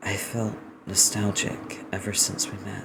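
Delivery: gentle, light, soft, hushed half-whisper. Narrator reading the light-voiced character's line in a light half-whisper. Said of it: "The light voice whispers".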